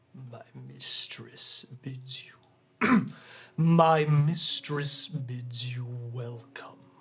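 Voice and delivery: slow, menacing, malevolent evil voice, echoing. Narrating an adventure, the speaker voices a presence in the keep: malevolent echoing voice. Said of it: "A malevolent voice echoes through the air".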